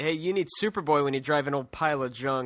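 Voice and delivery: put-on scornful, cruel, mocking taunt. Retelling what a character says while speeding past: imitating a mocking taunt. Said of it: "Just, just mocking them".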